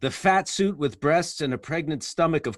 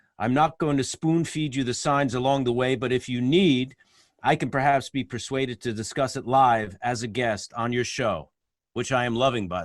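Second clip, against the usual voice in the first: ordinary talk, nothing marked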